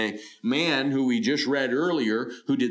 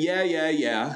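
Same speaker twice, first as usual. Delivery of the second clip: mocking, dismissive, sarcastic brush-off tone; 3 semitones higher than usual. Explaining a Bible passage, the speaker acts out a man's mock-sarcastic reply. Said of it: "He knew he was using sarcasm here".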